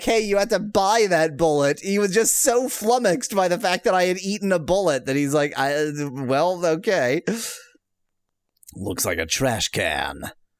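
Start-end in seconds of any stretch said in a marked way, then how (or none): 0.0-1.8 mock, acted-out yell. Retelling what the seller could have shouted after him when he left, mock yell after someone. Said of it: "rather than yelling after me like".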